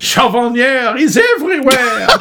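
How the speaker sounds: loud, high, hammy fake French accent with a laugh.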